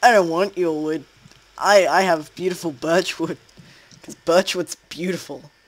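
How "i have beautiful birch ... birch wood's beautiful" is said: sarcastic, insincere, boastful tone. Player splitting off from a teammate in a game, sarcastic. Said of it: "That was sarcasm".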